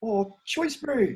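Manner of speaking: put-on New Zealand accent. A host practicing a Kiwi voice on air, in a Kiwi accent. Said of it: "I'm just practicing my Kiwi voice brew".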